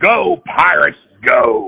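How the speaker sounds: very loud wrestling-promo yell belted at full volume. Showing how the wrestling promoter did the game intro: imitating Vince McMahon's intro. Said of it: "It would be more like this".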